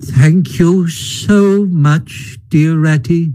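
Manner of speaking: feeble, weak, frail, faint voice. Narrator reading Toad's reply from his sickbed, in a feeble, weak voice. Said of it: "a feeble voice replied".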